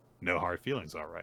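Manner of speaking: ordinary delivery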